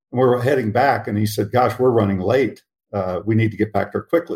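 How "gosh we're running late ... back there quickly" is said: plain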